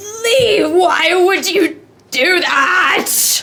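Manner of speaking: very loud, shrill, high-pitched shouting. A game master voices a man shouting at the players from his house, shouting. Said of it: "you hear a shout from this person".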